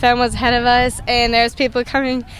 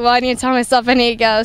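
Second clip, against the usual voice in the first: ordinary talk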